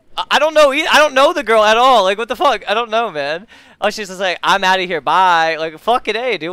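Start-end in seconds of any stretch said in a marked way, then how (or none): 4.5-5.6 slow, fed-up, pissed-off voice. Retelling how someone just said goodbye: imitating someone sounding pissed. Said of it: "did she sound pissed".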